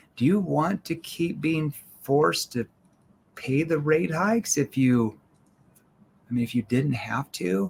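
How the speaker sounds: worried, puzzled, concerned tone. Teaching learners how to deliver a pitch line, in a confused, concerned tone. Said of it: "concerned tone".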